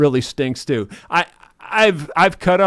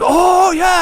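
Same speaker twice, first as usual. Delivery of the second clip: worked-up, excited, very high-pitched put-on German accent; 6 dB louder than usual. Retelling a fishing story as a man grabs the trot line, imitating excited German accent. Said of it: "he gets all excited in his German accent voice".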